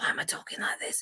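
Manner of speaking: soft, unvoiced, croaky whisper with voice gone.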